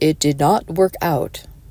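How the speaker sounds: put-on documentary narrator voiceover voice. Describing a fifty-cent candle holder bought to make a match, in a narrator voice. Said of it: "Narrator voice".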